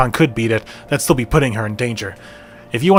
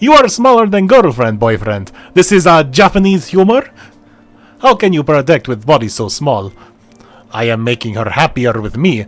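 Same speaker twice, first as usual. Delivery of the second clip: bad, butch, put-on Russian accent; 3 dB louder than usual. Challenging someone's boyfriend in a comic bit, in a butched-up russian accent. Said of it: "I'm doing some like butched up Russian something".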